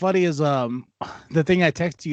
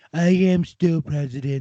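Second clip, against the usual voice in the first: whiny, whining sore-loser voice. Impersonating a losing, sore Donald Trump, mock-whining Donald Trump impression. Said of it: "I do an impression of Donald, and this is going to be whining, losing Donald".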